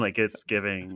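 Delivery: ordinary delivery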